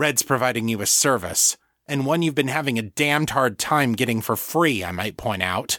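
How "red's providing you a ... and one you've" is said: ordinary delivery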